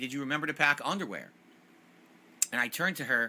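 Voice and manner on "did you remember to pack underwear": put-on screaming at a higher pitch. Retelling a childhood story, the speaker repeats what his mom screamed: retelling mom's scream. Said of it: "my mom screamed".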